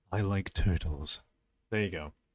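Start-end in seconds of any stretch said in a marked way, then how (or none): 0.1-1.2 comically low, exaggerated deep silly put-on voice. Performing a redeemed request line in an exaggerated deep voice. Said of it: "a deep voice of me just going".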